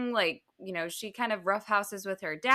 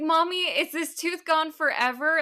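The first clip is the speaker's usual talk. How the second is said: put-on frantic, freaked-out little kid, high and panicked; 7 semitones higher than usual. Retelling a daughter's question about a loose tooth: imitating a child freaking out. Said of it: "she starts freaking out".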